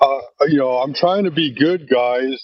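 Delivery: mock, sad, pleading puppy-dog voice. Mocking how a man came in talking to the group, in a mock sad puppy-dog voice. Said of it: "with this little sad puppy dog voice".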